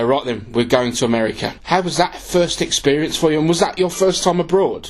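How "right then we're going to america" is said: usual speaking voice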